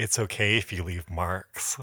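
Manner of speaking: close, confiding, hushed, soft half-whisper. Retelling what a guy half-whispered in the ear: imitating someone half-whispering. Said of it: "he leans in and whispers in my ear".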